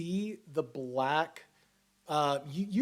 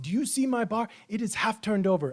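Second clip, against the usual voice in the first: high, furious yelling; 6 semitones higher, 4 dB louder than usual. Voicing the bar's owner as he confronts you about his bar, yelling in Common. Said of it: "he is yelling at you in common".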